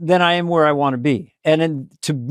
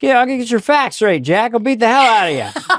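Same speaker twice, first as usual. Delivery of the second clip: put-on defiant, old-school fifties tough-guy voice, higher pitch; 6 semitones higher than usual. Showing a later version of the impression: defiant fifties guy Joe Biden voice. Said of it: "the defiant fifties guy".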